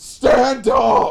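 choked-up voice crack, very high and loud. Retelling a man urging a seated crowd to stand: imitating a choked-up voice crack. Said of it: "the worst voice crack I've ever heard, he starts, like, choking up and goes".

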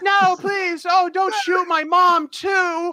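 very high, loud, panicky pleading. Joking that Justin Roiland plays young Bruce Wayne, pleading for his mom, in a Morty voice. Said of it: "play the young Bruce Wayne voice".

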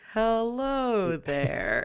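very slow, each word stretched long, drawn-out hello. Imitating the notes greeting someone, imitating slow speech. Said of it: "they get, like, really, really slow".

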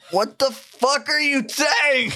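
shrill, very high-pitched yelling. Showing how people shout at each other when their ears are ringing, yelling. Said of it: "I'm gonna just yell".

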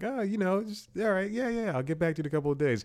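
play-acted, very high-pitched, noncommittal, lukewarm brush-off tone. Retelling own reply to a job offer: imitating own lukewarm reply. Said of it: "a lukewarm".

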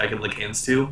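ordinary talk, nothing marked

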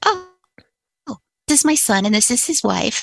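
plain

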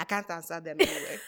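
put-on soft, low Nigerian accent. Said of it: "use an accent real quick".

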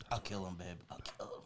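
soft, quiet, menacing whisper. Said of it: "I wish you would stop whispering".

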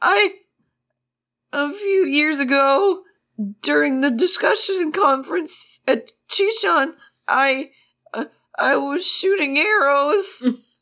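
put-on stuttering, stammering boy voice. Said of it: "Are you a stutterer?".

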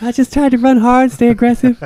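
sugary and pitched way up. Remembering a great player with another fan, imitate Walter's sweet voice. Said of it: "did you, Walter?".

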